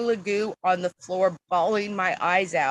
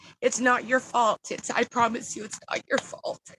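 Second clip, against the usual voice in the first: voice catching, choked up, close to crying; 4 semitones higher than usual. Speaker reassures the listeners, choking up, near tears. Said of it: "Now I'm gonna cry".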